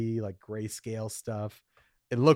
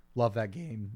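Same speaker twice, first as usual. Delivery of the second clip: voice cracking, quieter and faster; 5 dB quieter than usual. Talking about a favorite game, voice cracking. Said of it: "My voice just cracked".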